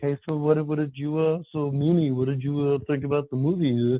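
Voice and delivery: timid, shy, halting, nervous, hesitant, stumbling delivery. Retelling leaving a movie with a girl, acting out being shy. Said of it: "I'm all shy".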